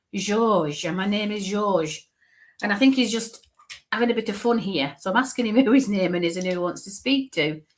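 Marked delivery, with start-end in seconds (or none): 0.1-2.0 very French, slow, comic put-on French accent. Relaying the man's answer when asked his name, in a put-on French accent. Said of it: "Sounds very French".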